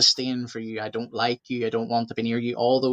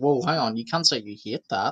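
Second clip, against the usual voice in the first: ordinary talk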